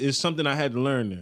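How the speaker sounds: ordinary delivery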